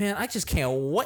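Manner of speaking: exaggerated high energy. Showing what turning up the energy levels sounds like: exaggerated high energy. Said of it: "if I were to just turn up the energy levels and be like".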